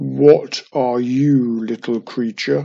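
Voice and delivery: deep, rolling monster voice like distant thunder. A giant rock head appears beside a witch and speaks to her: deep, rolling monster voice. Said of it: "The monster spoke in a deep, rolling voice".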